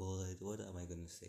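ordinary delivery

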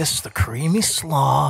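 play-acted sly, suggestive, innuendo-laden delivery. Mocking how the other speaker talks about food: imitating a suggestive innuendo tone. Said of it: "everything you say has, like, a sexual innuendo".

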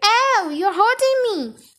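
sudden, high-pitched pained cry. A boy whose ears are pinched from behind, crying out in pain. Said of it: "Eric cried".

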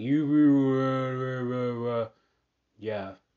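put-on loud, sloppy drunken slurring, with "you" drawn out. Describing a man who showed up late to a show, imitating his slurring. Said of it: "slurring his words".

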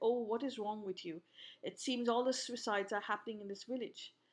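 ordinary delivery

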